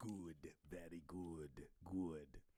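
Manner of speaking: put-on sneaky old voice, very low, soft and hushed. A Star Wars fan recalls the films, doing the Emperor's sneaky old voice. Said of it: "they'll do that old sneaky voice".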